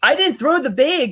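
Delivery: put-on thick, heavy Canadian accent, very high pitch. Speaker quotes someone's line in a thick Canadian accent. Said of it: "they had that thick Canadian accent".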